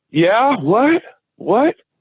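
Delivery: high, startled, half-asleep voice, like just waking. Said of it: "I, I went".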